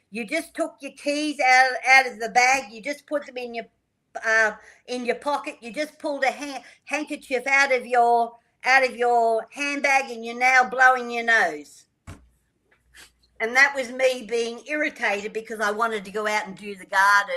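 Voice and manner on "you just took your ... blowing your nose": full-throated, loud yell at top of voice. Speaker retells what they yelled out at someone: retelling a yell at top voice. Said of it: "I just yelled out at the top of my voice".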